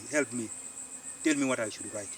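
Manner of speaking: ordinary delivery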